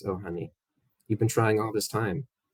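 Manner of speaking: sly, wicked, devilish, teasing taunting tone. Voicing a departing villain answering a death threat: devilish, smiling taunt. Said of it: "She smiles at you devilishly and says".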